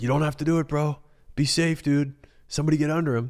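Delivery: play-acted very high, urgent, pleading yell. Retelling a crowd scene of people jumping from trees: imitating his own yelling. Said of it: "And I'm yelling in the mic".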